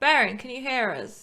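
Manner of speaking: calling out loudly. Playing a character calling through a mirror to a friend: shouting back. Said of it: "sort of shout back".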